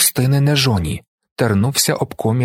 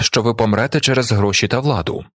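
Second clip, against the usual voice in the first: plain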